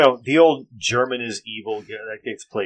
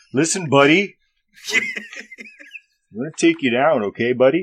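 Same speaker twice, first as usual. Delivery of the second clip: put-on, sing-song, hoser-style Canadian accent; 5 semitones higher than usual. Threatening opponents in a scene, speaking in a canadian accent. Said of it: "They should speak with Canadian accents".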